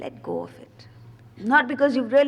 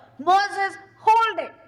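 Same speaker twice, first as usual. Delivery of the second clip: booming, loud, high-pitched roar; 9 semitones higher, 5 dB louder than usual. Retelling the voice commanding moses one final time, retelling a roar. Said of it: "finally he gives a roar".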